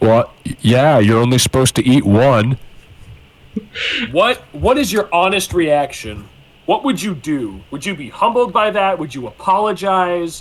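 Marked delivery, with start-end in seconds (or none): 0.0-2.6 deep, loud, booming, all-surrounding heavenly voice. After a moment of silence, God speaks to you: booming voice of God. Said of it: "a large, booming voice surrounds you".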